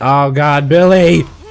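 loud shouting. While playing, the speaker shouts a player's name after getting hit: shouting. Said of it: "I'm just shouting Billy".

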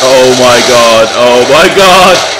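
loud, rising, startled yell.

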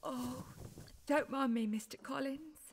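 soft, tearful, weeping voice. In a drama scene, a character waves off another's concern: crying. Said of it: "How could I when you're crying?".

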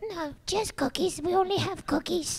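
impression of a woman's voice. Retelling asking for coffee at an intercom: imitating the woman they ordered from. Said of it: "It's a really good impression".

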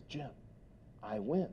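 soft, very quiet, confiding whisper. Retelling how a banker leaned in and whispered: imitating a banker whispering. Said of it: "he leans in and he whispers to me".

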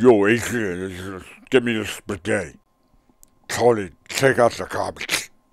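slow, drawn-out motherly voice. Imitating a mother who talks like the actor: imitating a mother in Stallone voice. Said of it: "She sounds just like that".

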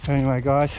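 panting a bit, slightly out of breath. Speaker talking to viewers on camera outside in the heat, panting. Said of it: "as you can hear, I'm panting a bit".

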